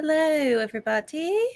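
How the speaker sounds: terrible, unconvincing fake British English accent. Opening a livestream, the speaker greets everybody in a bad English accent. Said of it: "Oh, we're English".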